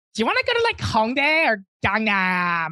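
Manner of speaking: gentle, mild half-yell with swooping pitch. Retelling strangers' subway chatter, imitating the loudest voice. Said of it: "like in the loudest voice".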